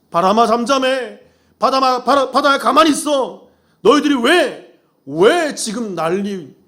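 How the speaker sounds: high-pitched, stern, rebuking tone.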